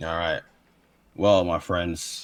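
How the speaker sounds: level, flat, droning monotone delivery. Opening a pitch to another speaker: monotone voice. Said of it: "You're not gonna monotone me out".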